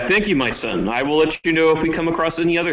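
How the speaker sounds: mild, light calling-back voice. Voicing a preacher yelling thanks back while leaving: yelling back. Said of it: "I will yell back".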